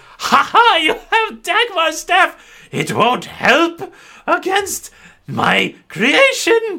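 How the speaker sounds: very high, swinging, swooping cackle. Narrating a game scene as she confronts the players, cackling Lady Marguerite. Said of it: "Lady Marguerite cackles as she sees".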